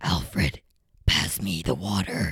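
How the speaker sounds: very low, slow, scratchy whispered put-on voice.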